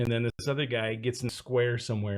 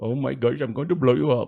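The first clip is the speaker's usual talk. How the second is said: loud, put-on Indian accent; 3 semitones higher, 6 dB louder than usual. Showing the accent always used when trying a terrorist voice: put-on Indian accent. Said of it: "I always do an Indian".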